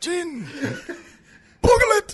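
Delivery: character voice pitched very high. Asked to do an impression: Saul Guerrero impression. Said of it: "Do your Saul Guerrero".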